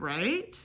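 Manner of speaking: right said with upward rising intonation. Pointing out english intonation on a tag question: rising tone on right. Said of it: "Notice how my voice went up".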